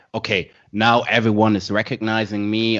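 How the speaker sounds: ordinary delivery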